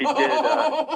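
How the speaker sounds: high, embarrassed laughing through words, trailing off.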